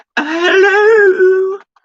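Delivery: shrill, booming, very high, loud squealing character voice. Acting out a little scene with figures, saying hello in Mrs. Doubtfire voice. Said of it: "hello in a Missus Doubtfire voice".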